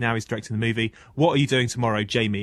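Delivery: ordinary talk, nothing marked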